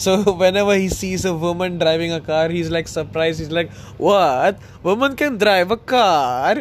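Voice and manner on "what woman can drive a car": put-on speaking with a Kazakh accent. Retelling a character surprised to see a woman driving, proper Kazakhstan accent. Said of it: "He's like that proper Kazakhstan accent".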